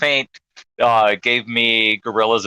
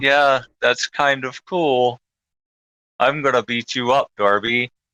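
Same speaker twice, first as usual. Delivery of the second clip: put-on calm, relaxed, tranquil delivery. Retelling a wrestler's promo: imitating someone talking calmly. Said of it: "And he's just like this".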